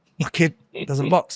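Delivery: ordinary talk, nothing marked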